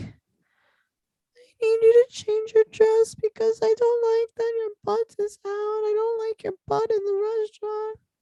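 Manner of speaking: very high, squeaky voice. Retelling what a man on the show said, in a Stuart Little voice. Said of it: "Stuart Little".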